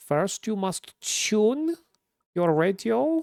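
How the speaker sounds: put-on German accent, high, leaning hard on U. Imitating a German guy with a radio channel, German accent, heavy U sounds. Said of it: "German loves just pronouncing the fuck out of U's".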